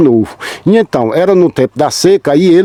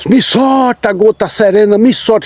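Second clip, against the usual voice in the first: shouting at high pitch; 5 semitones higher than usual. Retelling how a man snagged on a branch yelled: imitating someone shouting. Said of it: "E ele ficou gritando".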